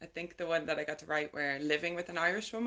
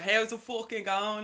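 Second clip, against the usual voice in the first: put-on loud, pitched-up Dublin accent; 5 semitones higher, 5 dB louder than usual. Retelling putting on an accent to pass as from Dublin, Conor McGregor Dublin accent. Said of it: "I put on like some kind of Conor McGregor accent".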